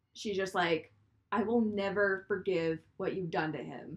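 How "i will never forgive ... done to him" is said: ordinary talk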